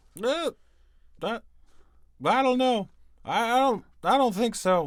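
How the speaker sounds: very high, standard fantasy gnome voice, pitch pushed up. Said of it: "this is more of a standard gnome voice".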